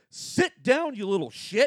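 very high, shrill scream with swooping pitch. Retelling how a restaurant owner screamed at a running kid: imitating someone screaming. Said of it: "just screams at him".

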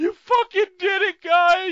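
put-on very high, loud, rowdy drunken hollering. Recapping a title win, quoting a fan in the crowd, imitating a drunk fan yelling. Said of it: "this drunken dude who just starts yelling".

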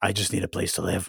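very quiet, low, rough, creaky gremlin croak. Speaker acts out renters facing high rents, in a gremlin voice. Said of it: "Why did you have to sound like a gremlin?".

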